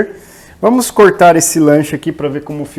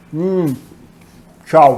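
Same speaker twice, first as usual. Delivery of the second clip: speaking while chewing, mouth full of food. Closing the video after taking another bite, talking with mouth full. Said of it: "de boca cheia".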